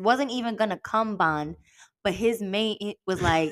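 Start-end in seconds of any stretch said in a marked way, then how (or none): 0.8-1.6 'come bond' said with stress. Summing up a story to a listener, stress on 'come bond'. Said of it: "You just said it with such emphasis".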